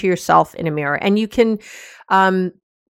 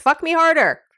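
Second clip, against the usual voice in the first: projected, raised, pitched-up, louder voice; 9 semitones higher than usual. Showing how to try out a request line: louder voice. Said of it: "you might say that more in a louder voice".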